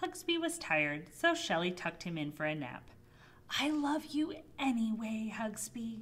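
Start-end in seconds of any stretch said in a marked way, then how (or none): 3.6-6.0 slow, hushed half-whisper. A girl tucking him in for a nap speaks to him, half-whispered. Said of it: "she whispered".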